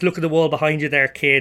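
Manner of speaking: usual speaking voice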